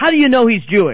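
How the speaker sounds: angry, loud, high-pitched pushing-back tone. Retelling what the boss said back to a man, in a mock-angry tone. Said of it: "In an angry tone".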